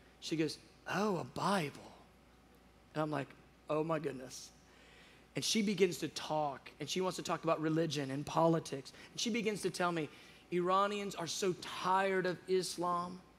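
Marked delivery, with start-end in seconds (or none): 0.9-1.8 put-on flawless, spot-on British accent. Retelling a woman's reply on seeing the speaker's bible, in a british accent. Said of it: "in a perfect British accent".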